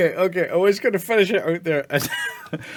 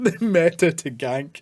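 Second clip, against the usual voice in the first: slow, laughing through words, cracking up mid-phrase. Rereading a funny phrase from a comment: laughing while talking. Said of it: "I can't say it without laughing".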